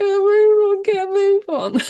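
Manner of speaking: acted screaming. Retelling watching a horror film with friends: imitating screaming at the screen. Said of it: "we were all just screaming, like".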